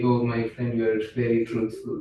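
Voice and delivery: ordinary talk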